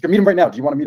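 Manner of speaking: shouted voice. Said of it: "literally shouted at me".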